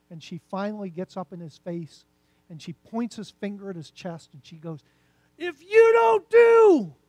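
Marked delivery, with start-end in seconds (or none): 5.3-6.8 higher, louder imitated woman's scream. Retelling how a woman at church screamed at the pastor: imitating a woman screaming. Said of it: "she's screaming at the pastor".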